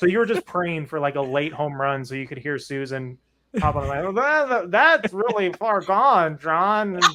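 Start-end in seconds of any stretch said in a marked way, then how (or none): 4.0-6.9 put-on high, drawn-out, heavily slurred drunken speech. Speaker recalls Susan hopping on the line late in a game, imitating Susan's drunk slurring. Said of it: "her speech would become more and more slurred".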